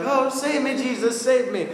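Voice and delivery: high, panicked voice crying out. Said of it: "He started to sink into panic".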